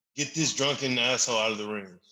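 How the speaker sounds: ordinary talk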